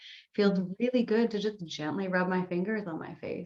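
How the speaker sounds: ordinary delivery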